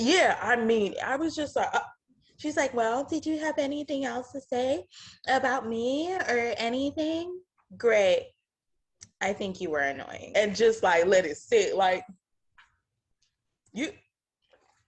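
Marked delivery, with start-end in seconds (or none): 2.7-7.4 rude, uncaring, condescending delivery. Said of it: "her delivery".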